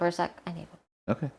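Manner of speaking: speaking in a whisper. Asking the other speaker for a short break, whispering. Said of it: "Why are you whispering?".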